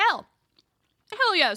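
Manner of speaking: choking, with the word cut off. Telling a new Twitch subscriber about channel access, choking on food. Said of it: "I started choking a little bit on my my chicken".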